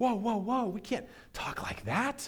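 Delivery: very high, hushed, high-pitched voice. Imagining a disciple pulling a friend aside to scold: hushed rebuke as Peter. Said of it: "rebuke him in a hushed tone".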